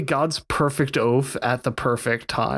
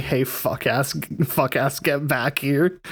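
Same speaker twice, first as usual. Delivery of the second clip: ordinary talk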